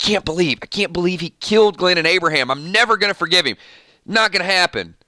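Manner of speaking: put-on grudging, unforgiving, resentful tone. Imitating resentful viewers who hate Negan at first: imitating resentful future Negan fans. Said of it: "here is my impression of people that will eventually be fans of Negan".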